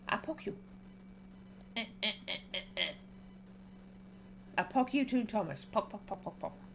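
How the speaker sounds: hushed, squeaky, tiny guinea pig voice. Speaker pokes someone while talking, in a guinea pig voice. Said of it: "I'm doing a guinea pig voice".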